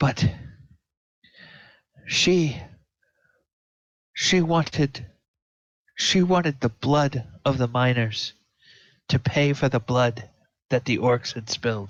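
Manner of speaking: weeping while speaking, tearful crying voice. Narrating a scene, the speaker voices a woman addressing Dorzafir, weeping while speaking. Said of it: "you can tell that she's weeping".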